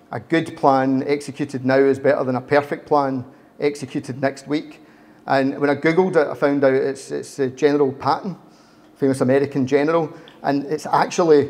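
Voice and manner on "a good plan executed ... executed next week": ordinary delivery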